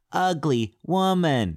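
slow, sing-song ape-like voice.

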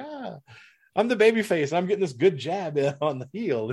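put-on smug, sweet, sugary tone. Retelling how a wrestler delivered an insult while playing the face: imitating Statlander smiling smugly. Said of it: "with a smile on her face".

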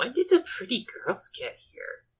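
high-pitched whispered aside. Voicing a character muttering while others are nearby: Zoe whispering to herself. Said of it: "just whispering to herself".

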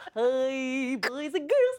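stretched-out hi, high and slow. Giving an audition tape for the others in the Barney voice. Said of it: "the voice of Barney".

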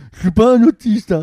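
high, mocking voice.

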